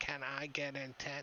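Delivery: soft, small goblin creature voice. Narrator voices a goblin tugging on a player's backpack; goblin character voice. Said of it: "tugging on your backpack".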